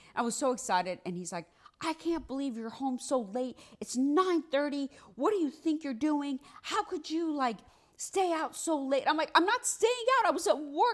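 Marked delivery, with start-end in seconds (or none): 1.8-9.1 put-on furious, loud, scolding top-of-the-lungs yelling. Retelling being scolded for coming home late: retelling a yell. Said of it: "he's like yelling at the top of his lungs".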